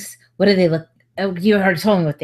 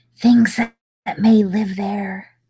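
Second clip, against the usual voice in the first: conspiratorial, secretive whisper; 2 semitones higher than usual. Playing a character asking for books in a scene, whispering very conspiratorially. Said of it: "she whispers very conspiratorially".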